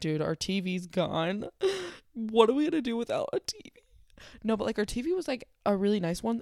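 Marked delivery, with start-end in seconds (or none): 0.0-3.7 mock talking through tears, swooping crying voice. Retelling the moment the car and TV were gone, imitating own past crying. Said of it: "I was crying".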